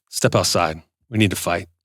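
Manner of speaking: acted calm, collected tone. Acting out a man challenging someone to fight: imitating a calm, cool man. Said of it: "the guy that's calm, cool, and collected".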